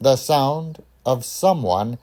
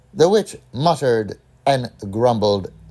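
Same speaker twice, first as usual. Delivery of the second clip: usual speaking voice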